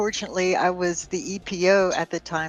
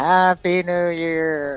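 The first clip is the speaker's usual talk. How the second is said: imitated flat, dead tone voice. Retelling the commanding officer flicking barracks lights: imitating a dead tone voice. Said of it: "really dead tone voice".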